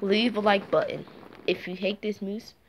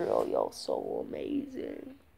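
deliberate put-on cartoon voice, slow and drawn out; 10 dB quieter than usual. Imitating a cartoon character's line: Cyborg voice. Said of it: "Cyborg thing, like".

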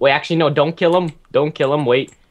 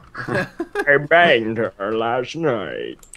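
deep villain voice with low, wide swooping pitch; 5 semitones lower, 3 dB quieter than usual. Playing a game with friends, a player blurts a line in a Bane impression. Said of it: "My best Bane impression".

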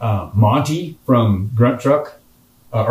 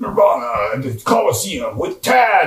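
slow, drawn-out, big monster truck arena announcer voice; 6 semitones higher than usual. Retelling what the radio said about a Nirvana show, big monster truck voice. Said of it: "and then the big monster truck voice".

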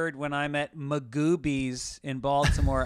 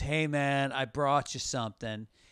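put-on laid-back hippie-dude voice. Retelling how a man came up after the show, imitating a hippie dude. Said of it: "he's kind of like this hippy-dippy dude".

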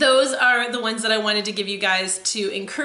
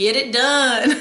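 put-on deep southern US accent; 5 dB louder than usual. Showing how you feel this phrase needs to be said, in your brother-in-law's deep south accent. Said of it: "I need to use my brother-in-law's accent. He's from the deep south".

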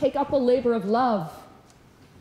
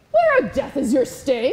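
provocative, taunting sarcastic tone. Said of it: "as Paul provocatively asks".

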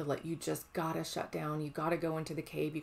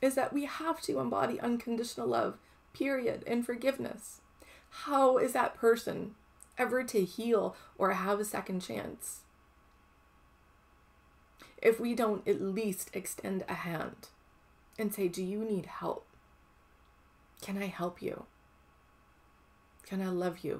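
emotional, choked up, near tears, much higher; 5 semitones higher, 3 dB louder than usual. Speaker addressing listeners, getting emotional; emotional, near tears. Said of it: "I'm getting emotional, I feel like I want to cry".

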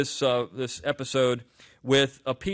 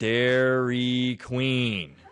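very slow, deliberate, every syllable drawn out. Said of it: "I want you just to speak very slowly".

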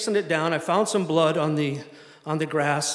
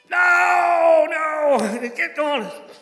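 shrill scream with a long drawn-out no; 12 semitones higher, 6 dB louder than usual. Recounting a man who kept yelling during plane loading, imitating a man screaming. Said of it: "He just keeps screaming at me".

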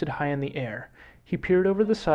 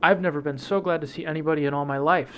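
usual speaking voice

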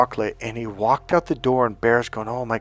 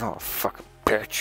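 mock muttering under breath, much quieter; 7 dB quieter than usual. Telling a story about a man who failed, retelling his mumble under his breath. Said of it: "under his breath he mumbled".

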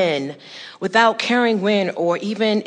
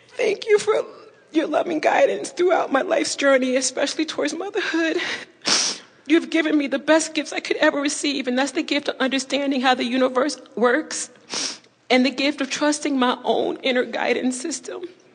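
tearful, crying, in tears; 6 semitones higher than usual. Pregnant with your first child, thanking Abraham for their guidance, tearful, crying though you did not want to. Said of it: "I so did not want to cry".

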